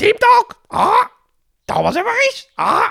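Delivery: clichéd parrot squawk, shrill, swooping, pitched way up. Asked how they would voice a parrot, the speaker demonstrates by voicing a parrot. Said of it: "Hoe zou jij een papegaai inspreken?".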